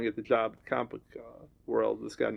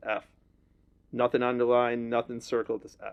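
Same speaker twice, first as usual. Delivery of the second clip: normal talking voice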